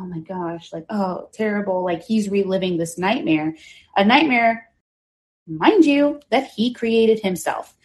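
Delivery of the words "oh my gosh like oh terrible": put-on heartbroken tone, slower. Describing a man watching his own interrogation from the courtroom, mock heartbroken. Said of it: "he's feigning heartbreak".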